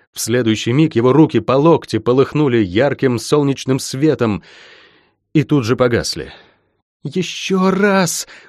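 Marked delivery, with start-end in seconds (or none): 7.0-8.2 high, pleading, begging cry. Lain urges the healer to try once more, pleading exclamation. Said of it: "умоляюще воскликнула Лайн".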